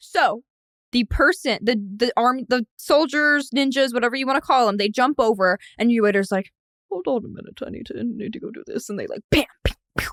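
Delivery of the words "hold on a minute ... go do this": put-on soft, hushed, classic Canadian accent. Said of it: "Again, classic Canadian accent".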